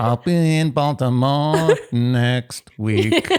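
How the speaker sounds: mock auto-tuned voice. Imitating what a woman on the show whispered in a hug: fake auto-tune voice. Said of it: "Is that your auto-tune voice?".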